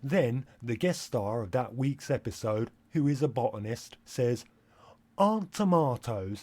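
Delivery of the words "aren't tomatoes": put-on, proper British accent. Quoting a botanist guest star on an episode, in a proper British accent. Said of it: "They say tomatoes like that because they're British".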